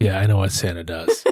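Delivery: play-acted very dry, low deadpan. Retelling a character's reply in a film scene: imitating a real dry delivery. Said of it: "Just real dry".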